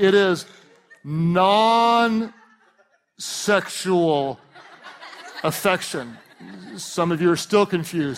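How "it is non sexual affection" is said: very slow, deliberate, drawn out word by word. Explaining a term to the audience, the speaker says it really slowly. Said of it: "I'll say it really slowly".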